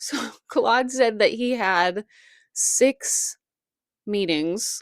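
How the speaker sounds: giggling and laughing through the words. Retelling a serious claim about meetings with aliens, giggling while talking. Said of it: "I don't know why I'm giggling".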